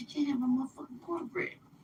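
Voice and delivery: whispering. Retelling telling a friend off over cornbread: imitating own whisper. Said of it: "I kinda whispered it".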